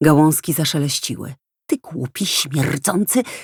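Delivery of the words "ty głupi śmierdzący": disgusted, with revulsion. A woman starts insulting a man, disgusted. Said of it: "patrząc z odrazą".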